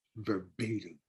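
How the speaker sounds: very low, very quiet, hushed murmur. Retelling how a woman passed on the director's request, mimicking someone speaking very low. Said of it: "And she said it like, you know".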